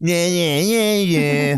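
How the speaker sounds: slow, taunting, mocking repeated "yeah yeah". Showing how a voice sounds when mocking someone: mocking voice. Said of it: "that's how you mock somebody".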